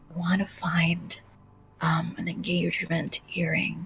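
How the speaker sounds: whispering. Voicing a character who leans close to ask for help: whispering. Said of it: "kinda whispers in her ear".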